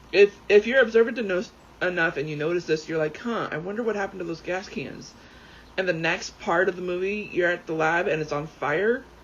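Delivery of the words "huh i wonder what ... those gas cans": ordinary delivery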